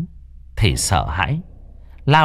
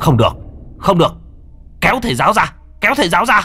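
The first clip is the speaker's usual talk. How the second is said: very high, rising, top-of-the-lungs scream; 11 semitones higher, 5 dB louder than usual. Someone screams as a man frantically unties a woman: screaming out. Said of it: "một người gào lên".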